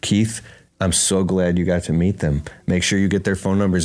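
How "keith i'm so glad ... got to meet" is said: ordinary delivery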